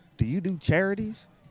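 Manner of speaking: high put-on voice of a young kid. Retelling what a kid who walked up asked: imitating a kid's accent. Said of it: "The accent is killing me softly".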